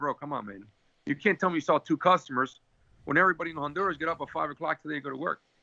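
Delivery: ordinary talk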